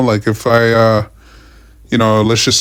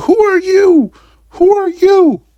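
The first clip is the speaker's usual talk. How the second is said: very high, loud mock yell of rude woman. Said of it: "yelling at me".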